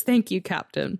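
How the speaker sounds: choked-up, emotional voice, breaking. Reading a game character's line aloud from the game: getting emotional. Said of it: "I'm getting so broken up about it".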